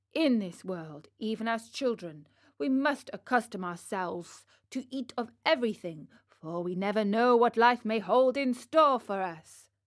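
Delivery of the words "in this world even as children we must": plain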